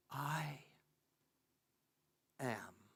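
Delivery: very quiet whisper. Narrator hearing a faint voice after silence, low whisper. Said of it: "in a lower tone, in a whisper".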